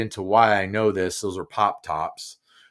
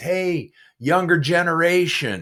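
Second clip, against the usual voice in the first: hollering, pitched high; 8 semitones higher than usual. Retelling a call from a neighbor on an upstairs porch: imitating a man hollering. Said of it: "he hollers at me and he says".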